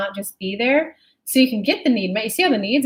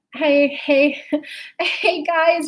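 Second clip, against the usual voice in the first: put-on very high, very slow, drawn-out little-girl voice; 6 semitones higher than usual. Describing a little girl on stage holding the mic, imitating a little girl. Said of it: "a little girl who goes up on stage".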